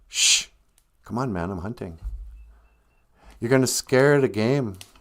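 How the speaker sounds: put-on grumpy, annoyed, crabby tone. Telling a story, voicing a hunter hushing his wife: acting out a crabby hushing. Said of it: "kinda crabby at his wife".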